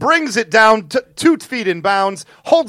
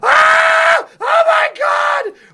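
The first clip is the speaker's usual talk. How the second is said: mock very high, shrill girlish shriek, long "oh". Retelling a football interception while in the restroom, screaming like a little girl. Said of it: "I start screaming like a little girl at a [name] show".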